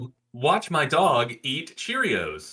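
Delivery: slow, sing-song, unnatural text-to-speech voice. Imitating the TikTok auto voice that was just called unnatural: TikTok auto voice. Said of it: "that TikTok auto voice".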